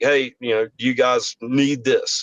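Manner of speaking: ordinary delivery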